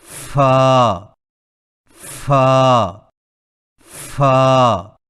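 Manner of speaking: loud fa, over-aspirated, air blasted out. Showing learners the wrong way to say fa: too breathy fa. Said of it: "فا کی ادائیگی میں زیادہ سانس نہ نکالیں".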